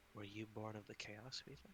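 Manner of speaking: hushed, leaning-in half-whisper. Leaning in close to ask another character a question, half-whispering. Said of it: "I lean in close and whisper".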